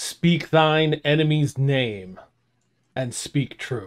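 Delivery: booming bellow, hitting syllable by syllable. Voicing an ancient device that demands a name: bellowing voice, booming each syllable. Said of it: "this bellowing voice says".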